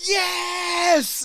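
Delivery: mock very high, stretched-out, drawn-out scream. Retelling seeing an announcement on Facebook in the bathroom, retelling a scream. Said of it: "And I started screaming".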